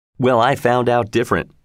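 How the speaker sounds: plain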